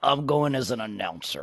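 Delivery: put-on very low, utterly fed-up, annoyed mutter. Retelling Collinsworth's answer about what he will dress up as, imitating the most annoyed voice ever. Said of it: "in the most annoyed voice ever".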